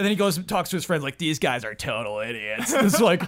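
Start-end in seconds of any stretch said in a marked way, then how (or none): 1.2-2.7 slightly mean, taunting trash-talk tone. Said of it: "always kinda, kinda mean".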